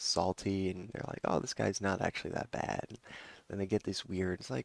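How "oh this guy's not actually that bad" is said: ordinary delivery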